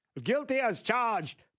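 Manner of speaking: put-on weird old British-American accent, high pitch. After a gavel sound effect, saying the verdict in a Ted Kennedy-like old accent. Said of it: "that really weird kind of British old American uh, accent".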